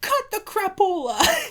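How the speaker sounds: very loud, shrill, high-pitched, distant-sounding holler. Retelling hearing someone call out during a fight, imitating mom shouting from afar. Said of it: "all I hear in the distance".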